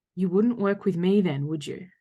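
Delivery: plain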